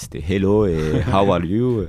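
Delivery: put-on Spanish-accented English. Speaker recalls the little English they knew before England, in Spanish-accented English. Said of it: "avec l'accent espagnol".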